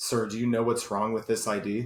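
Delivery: put-on flat deadpan delivery. Retelling what the man looking at his ID said to him, retelling a deadpan question. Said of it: "he looks at me like deadpan".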